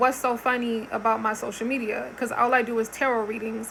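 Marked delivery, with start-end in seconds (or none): none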